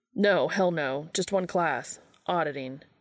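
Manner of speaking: plain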